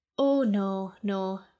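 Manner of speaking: spoken out on a sigh. A captor answers a prisoner who asks why she was woken: sighing. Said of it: "Reverence sighed".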